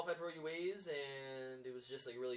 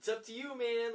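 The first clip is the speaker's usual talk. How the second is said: very loud, very high, drawn-out in-your-face yell; 11 semitones higher, 9 dB louder than usual. Retelling cheering a teammate on as he ran by: retelling own yell. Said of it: "yelling in his face".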